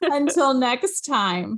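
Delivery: tearful, crying. Hosts signing off to their weekly listeners, crying while signing off. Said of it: "I'm crying".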